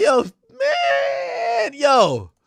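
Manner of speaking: blubbering through tears with a high, wailing sob. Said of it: "sobbing and like".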